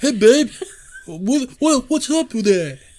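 very high, loud, squeaky, deliberately bad put-on voice. Retelling a scene, imitating how Chad sounded. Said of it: "That's how he sounded".

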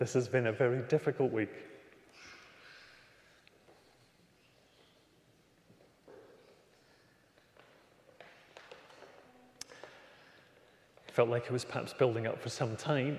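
strained composure, holding back tears. Telling a story of a very difficult week, holding back tears. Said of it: "trying not to get emotional now".

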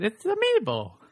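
very high-pitched, swooping, swinging cartoon voice. Joking about how a word sounds, says it in a Mario voice. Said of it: "You can almost say it in a Mario voice".

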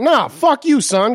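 put-on dismissive yell, high and drawn out. Retelling how someone angrily answered their portrayal of him: imitating Daly yelling. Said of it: "he was doing a Daily when he was yelling at me".

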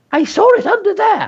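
very high, wavering, wobbly voice. David's mother points under the kitchen table and tells the family: wobbly voice. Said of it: "There was a wobble in her voice".

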